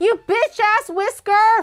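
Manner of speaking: loud angry yelling. Fixing a drawing, snapping at a stubborn whisker: yelling at a whisker. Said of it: "I'm yelling at this whisker".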